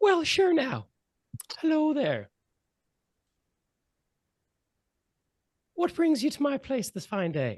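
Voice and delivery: super friendly, welcoming, sing-song voice, pitched way up. Voicing a voice inside a player's head: friendliest voice ever heard. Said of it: "the friendliest voice you've ever heard".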